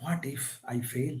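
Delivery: low, very soft whisper, sounding doubtful.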